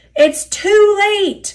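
groaned out, high groan pitched very high. Veering off the track, he groans before shutting his eyes, groaning:. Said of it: "Duck groaned".

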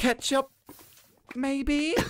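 mock, very high, sassy little voice. Retelling how Archie answered a waitress, imitating Archie, sassy. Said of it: "it sounded like he was having this massive sort of sassy fest".

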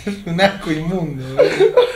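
mocking laughter in voice.

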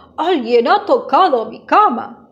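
growling, powerful big-bear voice. Narrator reading a bear story, the big bear at his bed: growling, powerful voice. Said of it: "el oso grande gruñe con voz potente".

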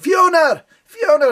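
put-on high-pitched, loud shout in a Scottish accent. Retelling a man with a tray of hot dogs calling through a crowd: retelling a Scottish man's shout. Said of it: "Scottish, ... walking through the crowd shouting".

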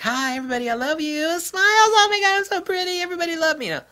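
very high, loud, mocking, bubbly TV host gush. Mocking a crazy TV personality's manner: Kelly Ripa impression. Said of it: "Kelly Ripa or something like that".

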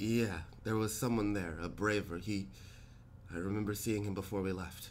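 stumbling, hesitant, stammering, halting words. Game master voicing Struthio, asked whether someone went missing, stammering. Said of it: "Struthio kind of stammers".

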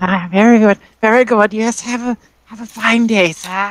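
put-on high old lady crone voice. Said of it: "the old lady voice".

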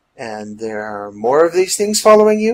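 ordinary delivery

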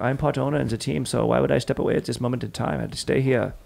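put-on evil-sounding, menacing German accent. Quoting the Mercedes team part owner Toto: Toto's German accent. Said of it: "the German accent sounds so evil".

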